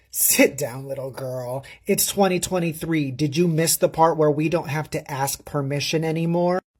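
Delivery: ordinary delivery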